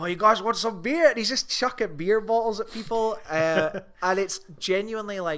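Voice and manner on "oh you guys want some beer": put-on hollering, screamed South African accent. Speaker describes a movie character yelling down from a roof, retelling a screamed South African accent. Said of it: "he's screaming down at the people below him in his South African accent".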